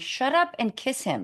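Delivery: plain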